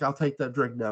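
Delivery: ordinary talk, nothing marked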